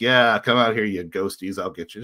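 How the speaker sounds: put-on cocky, taunting tough-guy voice. Retelling taunting the ghosts on the fourth floor: imitating own cheeky Hellboy act. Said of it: "I'm doing my Hellboy act".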